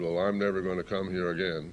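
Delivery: plain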